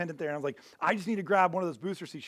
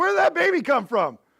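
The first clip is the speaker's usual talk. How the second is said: put-on very high-pitched, loud drunken holler; 10 semitones higher, 7 dB louder than usual. Retelling how a man who had been drinking yelled out: imitating a drunk man yelling. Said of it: "he yells out".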